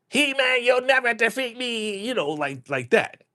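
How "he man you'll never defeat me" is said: whining voice pitched way up high. Disappointed by a regular voice, doing Skeletor's high whiny voice. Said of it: "with that high pitched whiny voice".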